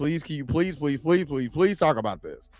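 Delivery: put-on, repeated, desperate begging and pleading. Retelling how Hunter Iggy begged for a topic to be covered: imitating someone begging. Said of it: "Hunter Iggy is like".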